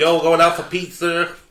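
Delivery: loud, high, bad put-on New York accent drifting southern. Trying out accents with the other speakers, an accent that sounds southern. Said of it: "Sounded southern".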